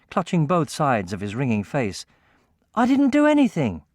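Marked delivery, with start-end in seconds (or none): 2.8-3.8 affronted, indignant, very high pitch. Reading a story aloud, a character protests being struck: indignant. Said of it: "Cat said indignantly".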